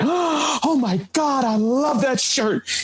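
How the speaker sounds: acted, very high belly-laugh voice, slow, drawn out. Retelling a store employee's reaction to a shirt: imitating laughing while talking. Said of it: "immediately busted out with a belly laugh".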